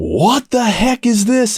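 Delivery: put-on angry very high outburst. Bank teller retelling a customer at her window; retelling a raised voice. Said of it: "he elevates his voice".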